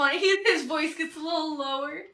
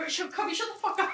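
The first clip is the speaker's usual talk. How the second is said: play-acted, furious, hushed, angry whisper; 4 semitones higher, 6 dB quieter than usual. Retelling the mother's answer to the father: imitating someone mad. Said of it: "I was already mad at him".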